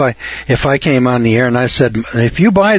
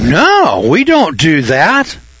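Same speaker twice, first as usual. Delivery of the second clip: swooping, holy, self-righteous indignation; 4 semitones higher than usual. Retelling how others answer his question, in mock righteous indignation. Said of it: "in holy righteous indignation".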